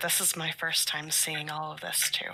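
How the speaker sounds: hushed, soft half-whisper. Lifting a child up so she can see better: half-whispering. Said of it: "I'll just whisper".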